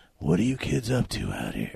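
put-on rough, raspy voice. Describing a movie character played by Michael Wincott: Michael Wincott gravelly voice. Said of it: "who has that real gravelly voice".

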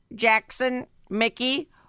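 high, slow, robotic mocking voice.

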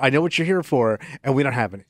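play-acted smug, superior, self-satisfied tone. Retelling what she would say to someone coming for wine coolers, mock-smug. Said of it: "she would smugly go".

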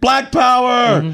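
put-on shrill, very high, loud rousing shout. Describing a woman who gets right next to a man: retelling her yell. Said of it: "she yells like her second".

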